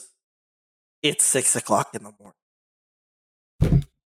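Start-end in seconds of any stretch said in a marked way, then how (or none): 1.0-3.8 low, soft, slow stern mom voice. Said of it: "she looks at you and goes".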